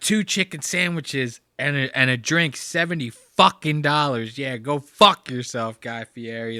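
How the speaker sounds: mock ticked-off, angry ranting voice. Retelling how a man ranted about a restaurant bill: imitating an angry rant. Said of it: "just the way he said it".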